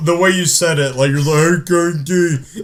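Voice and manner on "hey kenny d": put-on dopey, childish, babyish thumb-sucking voice. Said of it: "I'm sucking my thumb when I say it".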